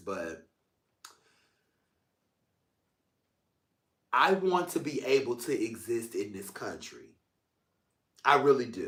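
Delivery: fighting back tears. Speaking into the camera about wanting to exist here, holding back tears. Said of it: "I told myself I was gonna do my best to hold back tears".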